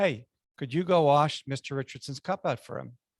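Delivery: ordinary delivery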